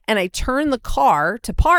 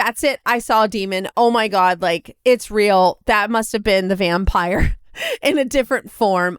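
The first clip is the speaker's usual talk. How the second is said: plain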